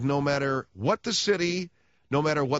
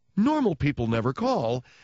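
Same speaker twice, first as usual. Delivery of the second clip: stress placed on the word normal.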